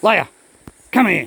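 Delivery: harsh shouting. Showing how a bad voice sounds when calling a dog, yelling harshly. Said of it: "Sorry to yell at you. I was just showing a demo".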